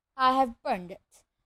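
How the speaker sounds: plain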